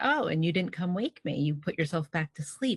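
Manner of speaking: ordinary talk, nothing marked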